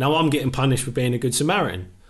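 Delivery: ordinary talk, nothing marked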